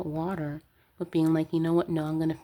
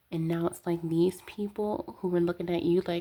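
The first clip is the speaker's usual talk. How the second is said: ordinary talk, nothing marked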